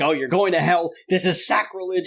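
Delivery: mock-furious, pissed-off, angry ranting voice. Recounting how a father reacted with fury at hearing some news, acting out his words. imitating an angry dad. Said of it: "he is so pissed off".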